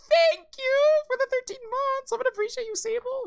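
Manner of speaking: very high put-on novelty voice. Thanking someone, in a high-pitched voice. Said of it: "I can't do the high voice anymore".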